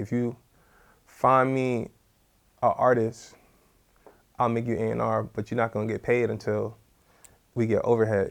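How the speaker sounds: ordinary talk, nothing marked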